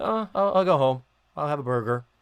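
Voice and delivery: put-on indifferent, uncaring voice. Retelling a TV scene, imitating John Astin with no passion. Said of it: "That implies too much passion and opinion".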